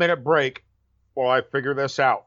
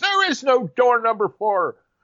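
mock top-of-the-lungs yell, high-pitched scream; 9 semitones higher, 3 dB louder than usual. Retelling how the DM answers the party's choice: imitating a DM screaming. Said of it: "the D M is screaming at the top of his lungs".

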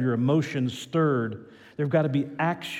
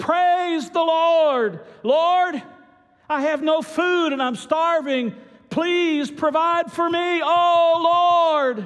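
mock loud, shrill, very high shout, oh stretched; 6 dB louder than usual. In a told story, an old lady steps onto her front porch: shouting. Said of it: "and she shouted".

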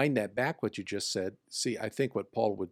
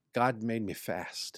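put-on Scottish accent. Quoting Eric Liddell from Chariots of Fire, Eric Liddell Scottish accent. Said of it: "With a Scottish accent".

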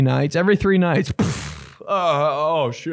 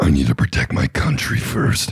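demonic voice, pitched very low; 9 semitones lower than usual. Telling a video-game story, speaking the player's line in a demon voice. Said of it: "Demon voice".

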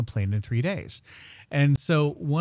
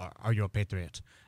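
put-on heavy, soft, thick, laid-on Spanish-speaking accent; 6 semitones lower, 6 dB quieter than usual.

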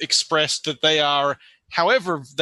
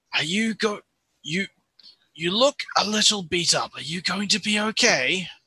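quiet, soft, higher-pitched voice; 3 semitones higher than usual. In a game, a player's character checks on a companion, said quietly. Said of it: "I'll just sort of say quietly to Flimp".

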